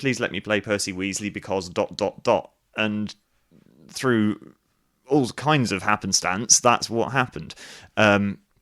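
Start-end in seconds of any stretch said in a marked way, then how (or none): none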